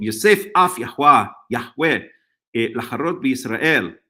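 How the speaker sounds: modern Israeli Hebrew pronunciation. Reading a Bible verse aloud in Hebrew quickly: modern Hebrew accent. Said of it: "I'm just gonna do a modern Hebrew accent".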